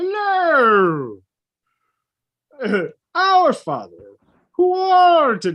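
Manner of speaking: high, swooping cartoon alien voice, slow, drawn-out hello. Imitating a man who sounded like Marvin the Martian giving mass: Marvin the Martian voice. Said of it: "he sounded exactly like Marvin the Martian. Imagine Marvin the Martian giving mass".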